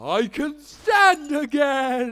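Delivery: overdone astonished gasp. After ranting about young ones, a character reacts with an exaggerated amazed gasp. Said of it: "*exaggerated gasp*".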